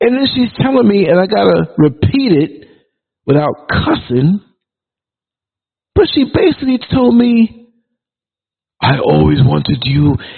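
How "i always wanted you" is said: put-on deep woman's voice. Repeating what a woman basically told him, in a deep woman's voice. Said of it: "she had a deep kind of voice".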